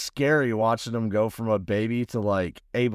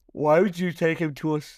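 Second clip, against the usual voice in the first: talking through a yawn; 6 semitones higher than usual. Speaker asking the other person a question, yawning. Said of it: "sorry, I was yawning".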